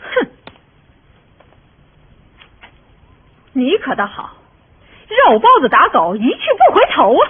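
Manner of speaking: loud, scoffing, scolding shout. A young lady confronts the man she came looking for, loud shouting. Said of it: "别嚷嚷。".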